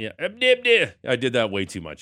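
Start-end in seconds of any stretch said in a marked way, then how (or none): 0.2-0.9 overdone, very high, loud silly syllables, put-on voice. Doing a bad impression of Gibby from the golf course: bad Gibby impression. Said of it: "My bad Gibby impression".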